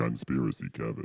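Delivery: low, deep put-on voice. Asked by another speaker for the deep voice version, announcing the name: deep voice. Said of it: "Can I get the deep voice one?".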